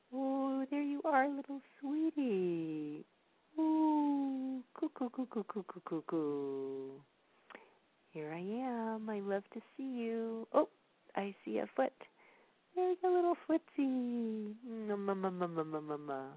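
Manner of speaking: put-on high, swooping, cooing baby talk. Explaining how parents talk to babies, the speaker demonstrates baby talk. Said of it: "It's like".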